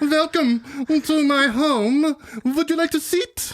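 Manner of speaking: mock German-accented villain. Acting out greeting a visitor to the villain's lair: very German Hitler impression. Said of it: "very German Hitler".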